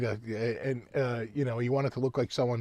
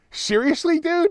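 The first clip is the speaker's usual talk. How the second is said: put-on laughing while talking, higher and louder; 7 dB louder than usual. Retelling a man's reply at a show, imitating him laughing while talking. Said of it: "he's kinda laughing like".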